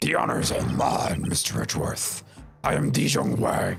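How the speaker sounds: put-on growly voice. Voicing the president answering Miles Edgeworth's greeting; growly voice as Dijong Wang. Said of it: "I'm gonna do the growly voice".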